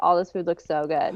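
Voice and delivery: ordinary talk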